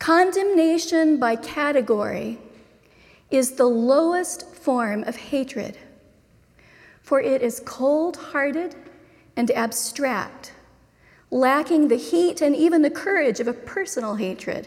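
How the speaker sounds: read slowly with long pauses. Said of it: "I'm gonna read it slowly".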